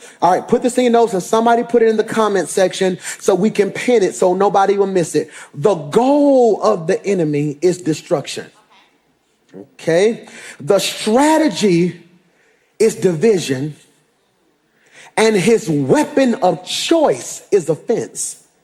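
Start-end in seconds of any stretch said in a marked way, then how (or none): 5.5-18.4 very slow, low, deliberate, word-by-word delivery. Speaker dictates a key point for listeners to write in their notes, slow and deliberate. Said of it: "I'm going to say it slow enough".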